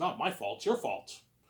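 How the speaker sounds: plain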